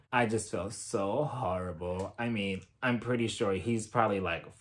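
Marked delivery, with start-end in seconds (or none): 0.1-2.1 very low, very quiet, hushed sympathetic murmur. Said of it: "doing that thing with her voice where she's talking so low and talking so quiet".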